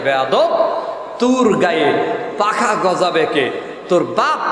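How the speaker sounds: normal talking voice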